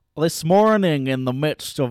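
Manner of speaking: poor Scottish accent attempt. Trying to read a passage aloud, in a bad Scottish accent. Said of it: "That wasn't good Scottish either".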